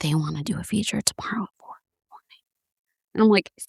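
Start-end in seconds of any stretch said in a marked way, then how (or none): 0.0-2.4 put-on whisper, quieter. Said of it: "Why is she whispering?".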